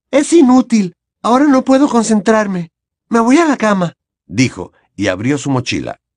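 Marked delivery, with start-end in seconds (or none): 0.1-3.9 strained and very high-pitched voice. Hermione speaks after staring at her blank parchment for a few seconds; tense voice. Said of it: "dijo con voz tensa".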